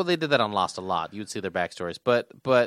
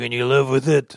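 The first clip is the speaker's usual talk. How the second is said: put-on weary tough-guy voice, louder; 4 dB louder than usual. Repeating a line from the show as Mike: Mike impression. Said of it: "That's my Mike impression".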